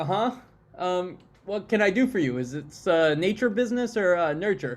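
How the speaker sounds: uneasy, halting, awkward cleric character voice. Voicing a cleric who awkwardly greets the adventurers: awkward cleric character voice. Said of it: "awkwardly look at you and be like".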